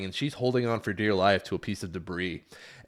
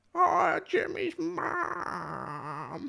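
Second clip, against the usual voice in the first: very high, rough, creaky, wobbling sing-song with swoops. Imitating a cartoon character asking Jimmy's mom something, Carl from Jimmy Neutron voice. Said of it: "I'm gonna do Carl".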